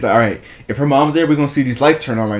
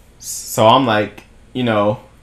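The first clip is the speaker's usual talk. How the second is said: usual speaking voice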